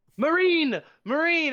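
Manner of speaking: very high, shrill, loud calling-out yell. Answering an in-game request to call out to a Space Marine: yelling out. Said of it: "you're gonna have to yell something out at him".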